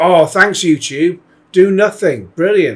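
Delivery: big, heavy, dripping sarcasm. Reacting to a copyright strike notice: heavily sarcastic. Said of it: "big sarcastic, by the way".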